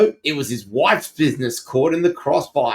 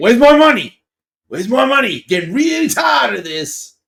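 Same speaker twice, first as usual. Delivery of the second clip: put-on high cartoon baby-mobster voice; 8 semitones higher, 3 dB louder than usual. Imagining a comedy skit aloud, doing a Stewie Griffin voice. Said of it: "Stewie Griffin doing the um doing the Sopranos".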